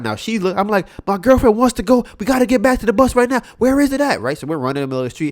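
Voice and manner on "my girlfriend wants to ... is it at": shrill, very loud, very high screaming. Retelling running down the street asking strangers for the bus: imitating own past screaming. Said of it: "I'm screaming to everybody like".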